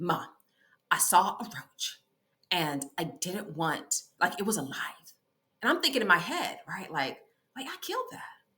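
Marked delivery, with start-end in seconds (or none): 0.0-4.8 mock grave, earnest, slow, dead-serious delivery. Mother retells what her daughter said to her, imitating daughter's dead seriousness. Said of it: "with all seriousness".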